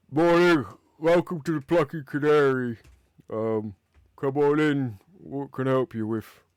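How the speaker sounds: loud, groggy, bleary just-woken ogre voice. Narrator voicing an ogre at the bar who just woke up as someone enters: sleepy ogre voice. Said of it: "like he's just waking up".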